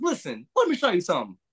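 high-pitched woman's voice. Quote the woman who taught you to swing a bat: impression of the woman who taught you. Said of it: "That's my dying impression".

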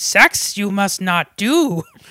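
very slow master voice, every word dragged out. Comparing another character to Yoda and acting out her line: Yoda voice. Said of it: "Hilda's like the Yoda".

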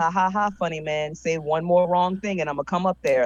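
ordinary delivery

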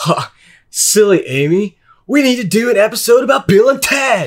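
high surfer-dude voice. Answering a co-host's question on the podcast, in a Bill and Ted voice. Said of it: "I can, but it's hard to take off".

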